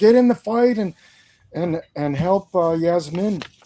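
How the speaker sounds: mild, high-pitched yell. Voicing a character yelling at a wounded ally to join the fight: yelling. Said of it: "And he yells, he yells at the".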